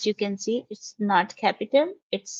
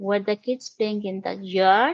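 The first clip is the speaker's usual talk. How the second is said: pitch rises on the final word yard. Teaching how to say a question mark, rising pitch on yard. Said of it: "You say it by raising your pitch at the end. If it was a question, you will say it like that".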